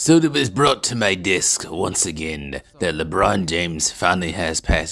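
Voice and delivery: attempted villain voice that falls short. Announcing news about LeBron James brought to your desk, in an attempted Hugo Strange voice. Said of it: "I can't do that Hugo uh Hugo Strange voice".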